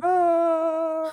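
high, screaming yell. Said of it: "where he's screaming".

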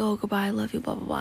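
ordinary talk

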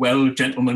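booming, very loud, high Lancashire brogue. Speaker retells a chairman addressing the other Premiership chairmen, in a Lancashire brogue. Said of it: "he said in his Lancashire brogue".

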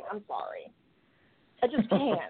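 giggly, laughing through the words, barely getting them out. Apologizing for cracking up at a phrase, laughing while talking. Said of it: "I can't even say the words pussy church without laughing".

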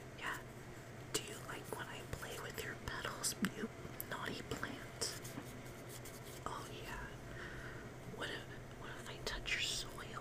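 very soft, hushed ASMR-style whisper.

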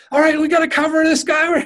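very high, super-intense barking voice. Retelling how he greeted you gently, then went straight back to commands, imitating Jerry being super intense. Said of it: "back to intense".

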